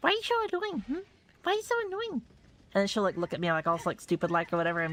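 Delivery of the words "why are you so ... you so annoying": very high, gentle cooing voice. Retelling how the dog gets spoken to: imitating own gentle cooing voice. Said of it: "very gently be like".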